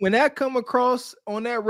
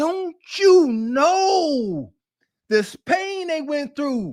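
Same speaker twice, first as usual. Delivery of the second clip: slow bluesy tone, "know" drawn out; 5 semitones higher than usual. Showing how to talk about the struggle, putting blues in the tone. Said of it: "you got to put some blues in your tone".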